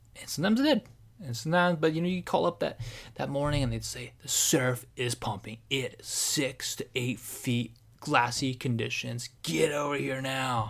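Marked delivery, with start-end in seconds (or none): 4.3-10.8 mock eager, excited, drawn-out, each word savoured. Retelling a morning surf-report call line: imitating an excited surf report. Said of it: "You just hear the excitement in the guy's voice".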